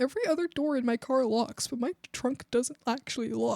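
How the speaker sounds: quiet, hushed, secretive confiding voice. Telling a secret about a car that nobody should hear: saying it quietly. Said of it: "I'm gonna say it quietly".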